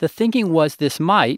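emphasis placed on the word "might". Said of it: "emphasis on might".

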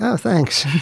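high, squeaky, put-on awkward voice.

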